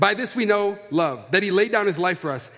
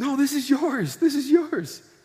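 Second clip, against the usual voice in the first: high, weepy voice, talking through tears; 7 semitones higher than usual. Retelling what a stranger said to him, imitating a crying woman. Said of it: "She's crying".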